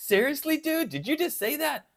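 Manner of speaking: mock scolding yelling, pitched very high. Voicing a guitar on the rack yelling at the speaker: mock yelling as the Monsoon guitar. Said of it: "My Monsoon is now yelling at me going".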